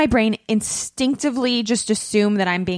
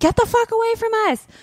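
shrill, very high, desperate screaming; 13 semitones higher than usual. A woman retells screaming at people she thought were following her, retelling a scream. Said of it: "I just kept screaming like".

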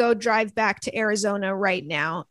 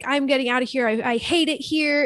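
play-acted yelling outburst, fully committed; 3 semitones higher than usual. Retelling a scene where a character yells at Charlie: imitating someone yelling. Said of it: "yells at Charlie".

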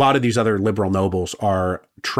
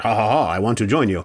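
put-on laughing, then speaking with a French accent. Describing a revolutionary hero as a rich French teenager, doing a Lafayette impression. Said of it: "my impression of Lafayette I just did".

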